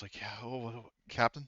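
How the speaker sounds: quiet, hushed, low-key voice. Narrator voicing a man who picks up and answers the Captain, in a quiet voice. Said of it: "he will pick up in kind of a quiet voice".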